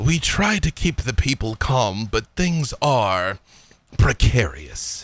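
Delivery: confidential, guarded delivery. Voicing a character who leans in to the party: lowered voice. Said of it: "he leans in and kinda lowers his voice".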